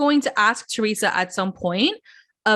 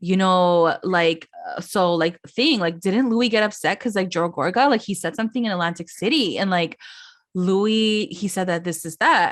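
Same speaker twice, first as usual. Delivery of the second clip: ordinary delivery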